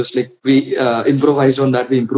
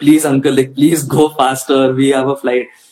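usual speaking voice

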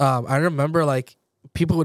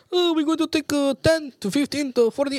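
very high, exaggerated put-on Mexican accent; 12 semitones higher than usual. Telling a co-host how dad gives driving routes, imitating dad in Mexican accent. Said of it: "I imitate him like a Mexican".

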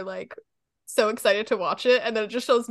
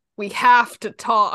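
put-on serious voice, louder; 6 dB louder than usual. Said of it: "just the seriousness of it".

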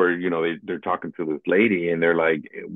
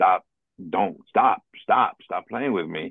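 put-on old lady voice, crying, tearful. Retelling a story where an old lady starts crying: imitating an old lady crying. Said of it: "the little old lady just starts crying".

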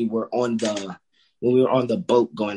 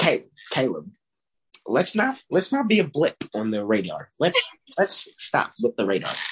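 animated, stumbling, halting, stammering speech. Retelling what a friend said to stop trouble: imitating Grayson. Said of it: "That was a good impression of him".

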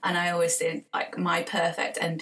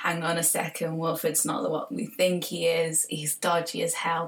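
ordinary delivery

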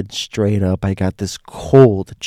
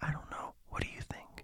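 low, hushed, barely voiced whisper. Retelling voices heard in a room: imitating a low whisper. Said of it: "in a low whisper-esque voice".

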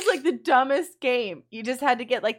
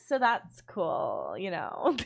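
drawn-out heiress voice, pitch swooping up and down; 2 semitones lower, 3 dB quieter than usual. Quoting Katie, who did not sound like herself, in a Paris Hilton voice. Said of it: "why do you sound like Paris Hilton".

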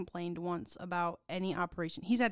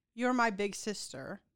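ordinary delivery

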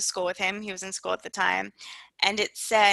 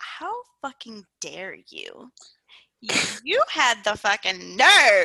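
mock-furious, acted rage; 4 dB louder than usual. Retelling telling a man to get out, retelling furious anger. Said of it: "like so fucking pissed off".

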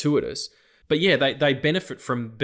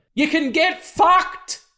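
very high, drawn-out, put-on British accent; 6 dB louder than usual. Retelling a rumoured reply from Henry Cavill, imitating a British accent. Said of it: "in a British accent".

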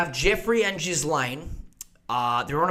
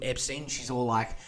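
plain

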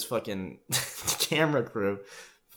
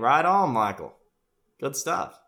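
raised, cheering, put-on Australian accent; 5 semitones higher, 6 dB louder than usual. Retelling a conversation, voicing the dad answering his son, in an Australian accent. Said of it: "His dad is just an Australian guy".

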